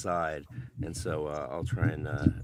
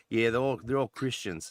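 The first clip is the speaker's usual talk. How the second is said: put-on New Zealand accent, much higher, louder; 7 semitones higher, 4 dB louder than usual. Retelling congratulating a creator on his success and his reply, imitating a Kiwi accent. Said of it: "that's more Kiwi accent".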